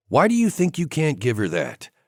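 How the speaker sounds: calm and composed. Narrator reading Grant's reply to the narrator's outburst: calm voice. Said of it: "He says in a calm voice".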